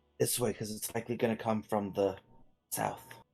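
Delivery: hushed whisper, under the breath. Hiding from an approaching clanking sound, telling a companion which way to go, whispering. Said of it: "I don't know why I'm whispering".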